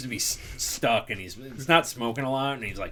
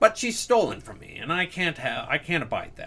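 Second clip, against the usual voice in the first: speech pushed out around a pipe stem. A boss chewing a pipe explains the job to the party; boss chewing on a pipe. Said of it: "who's sitting back and he's chewing on a pipe. / who's sitting back and he's chewing on a pipe. / And I need you to pull a job for me. / Oh, aye. ... Oh, my lad".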